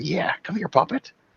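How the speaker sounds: high, soft skittering, scuttling voice. Speaker retells a second voice heard calling to a puppet, in a skittering voice. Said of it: "that's kind of skittering voice".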